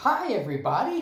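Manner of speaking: very loud, high, keen, enthusiastic voice. Podcast guest redoing his greeting after the host asks for more enthusiasm: more enthusiastic. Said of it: "There you go, that's better".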